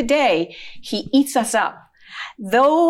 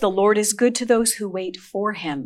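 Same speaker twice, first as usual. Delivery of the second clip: usual speaking voice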